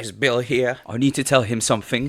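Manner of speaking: put-on Cockney accent. Retelling what a woman said at the hotel room door, in a put-on Cockney accent. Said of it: "I don't know why I made her Cockney".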